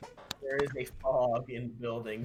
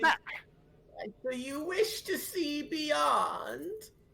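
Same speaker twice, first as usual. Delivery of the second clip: put-on very high, elderly woman's voice. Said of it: "an elderly woman's voice".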